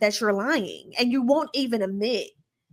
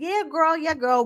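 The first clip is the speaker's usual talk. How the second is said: fibbing, raised-pitch tone; 6 semitones higher than usual. Retelling how Stacey brushed off the question, imitating Stacey lying. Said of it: "and Stacey just lying, just lying, like".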